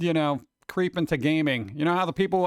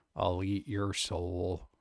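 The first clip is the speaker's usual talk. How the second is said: very low, very quiet, slow, drab monotone drone; 10 semitones lower, 10 dB quieter than usual. Showing what a funny impression would be, in a drab monotone murderer voice. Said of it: "very drab, monotone murderer".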